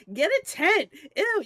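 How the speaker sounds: very high, loud, drawn-out yell of disgust. Voicing Kit across the camp reacting to a kiss: Kit yelling in disgust. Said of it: "be like".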